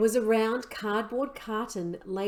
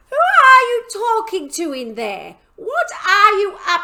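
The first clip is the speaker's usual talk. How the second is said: put-on shrill, very high, very loud old woman's screech; 11 semitones higher, 12 dB louder than usual. Reading a story, Grandma calls to George from the next room, screechy voice. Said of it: "came the screechy voice".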